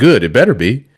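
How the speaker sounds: ordinary talk, nothing marked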